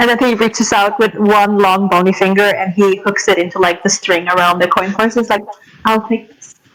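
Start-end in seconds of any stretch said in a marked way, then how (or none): 5.8-6.5 smug, self-satisfied tone. Voicing a character taking a coin purse with a giggle: smug. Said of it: "he tosses him a smug look".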